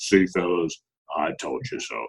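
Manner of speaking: deep, slow, unhurried delivery. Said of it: "in that big booming voice of his".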